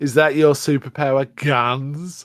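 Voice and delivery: acted scornful, sardonic slow sarcasm, "guns" drawn out. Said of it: "Mister Fury is sarcastically like".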